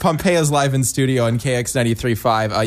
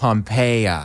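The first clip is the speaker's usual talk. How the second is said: slow, drawn-out word stretched in an American accent; 2 semitones lower than usual. Imagining how Americans will pronounce the name, drawn-out American accent. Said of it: "They'll really draw it out. ... That's how it'll get drawn out in American".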